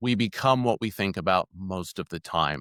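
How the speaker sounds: ordinary delivery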